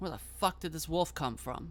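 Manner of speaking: ordinary talk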